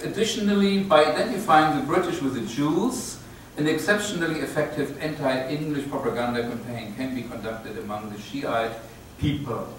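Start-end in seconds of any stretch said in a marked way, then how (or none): none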